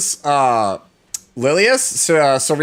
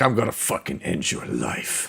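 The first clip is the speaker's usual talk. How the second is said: breathy whisper, cool and quiet; 13 semitones lower, 10 dB quieter than usual. Retelling what a game character says: imitating Furious's cool voice. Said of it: "Man's like".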